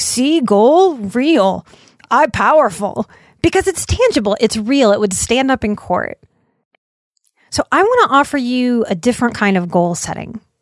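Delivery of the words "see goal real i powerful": very slow, broken caveman speech. Talking about tangible goals, the speaker mimics how a caveman would say it: caveman voice. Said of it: "Like caveman would say".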